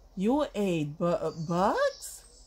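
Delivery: stuttering. Reading one bat's question to Stellaluna, stuttering. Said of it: "Stuttered one".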